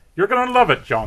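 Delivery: put-on Irish accent. Repeating a mother's line to John, put-on Irish accent. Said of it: "His mom's got sort of an Irish accent".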